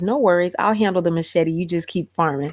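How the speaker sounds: ordinary talk, nothing marked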